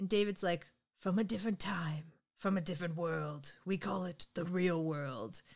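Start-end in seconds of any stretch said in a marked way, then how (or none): 1.0-5.4 big movie trailer announcer delivery. Retelling what someone said to a guy, in a movie trailer announcer voice. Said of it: "David turned into the movie announcer guy".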